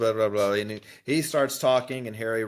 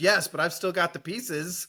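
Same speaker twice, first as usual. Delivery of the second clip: excited, thrilled, pitched-up voice; 7 semitones higher than usual. Retelling a book scene where Hagrid answers Ollivander: imitating Hagrid excitedly. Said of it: "he's all excited".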